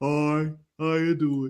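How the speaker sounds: deep, very low, dragged-out slow-motion speech. Speaker imitates how a woman sounds when she talks: imitating slow-motion talking. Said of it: "She sounds like she's talking in slow motion".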